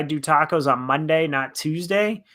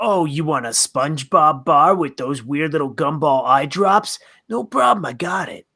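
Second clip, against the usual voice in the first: creepy ice cream truck driver character voice. Playing a creepy ice cream truck driver calling to kids: creepy ice cream truck driver. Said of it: "creepy-ass people in their little vans".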